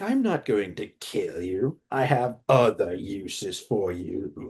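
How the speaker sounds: low, slow, drawn-out, mocking cackle. Retelling a fight scene, imitating Palpatine taunting while cackling. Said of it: "laughing hysterically, taunting him".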